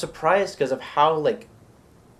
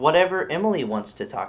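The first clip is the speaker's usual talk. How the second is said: normal talking voice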